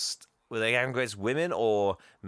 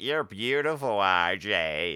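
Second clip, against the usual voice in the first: very camp, drawn-out man's delivery; 3 semitones lower than usual. Retelling a movie scene, quoting a character: imitating a camp man. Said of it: "there's a very camp guy on the board".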